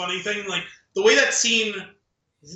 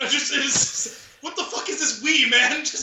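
mock-angry ridiculous rant, much higher pitch; 6 semitones higher than usual. Describing a comedian's bit, imitating his ridiculous rant. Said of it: "ridiculous rant".

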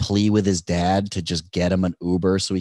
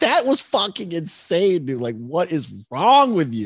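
very high, scolding, berating yell; 10 semitones higher than usual. Retelling driving away from a gas station, imitating own past yell. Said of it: "yelling at myself".

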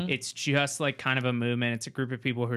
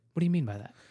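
mimicked calm voice, pitched higher; 4 semitones higher than usual. Imitating a radio interviewer asking a guest questions: imitating a calm interviewer voice. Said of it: "he has a calm voice like that".

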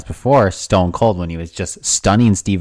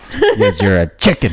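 normal talking voice

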